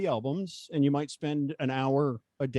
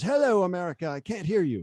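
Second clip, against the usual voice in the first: put-on elderly woman's thick Irish accent, pitched up; 5 semitones higher than usual. Retelling an eighty-five-year-old lady grabbing a radio microphone, thick Irish accent. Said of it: "this thick Irish accent".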